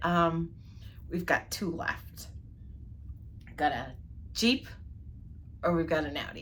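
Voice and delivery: quiet, hushed, breathy, confiding whisper. Retelling what a husband whispered to them at the counter, retelling a whisper. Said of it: "he kind of whispered to me and said".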